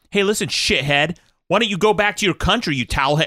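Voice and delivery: hostile, angry yelling, pitched high. Recounting callers phoning in to a show, imitating the callers yelling. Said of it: "just like yelling at this guy".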